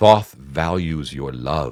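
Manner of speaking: very smooth, silky, slow, unhurried voice. Describing a scene, the speaker voices the voice in the listener's head, very smooth. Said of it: "It says in like this very smooth voice".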